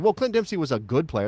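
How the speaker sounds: ordinary talk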